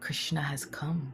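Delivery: sweetest soft whisper, close to the ear. Storyteller recounting how Lalita Devi wakes Srimati Radharani: Lalita Devi's sweetest whisper. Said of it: "in the sweetest voice, whispers into her ear".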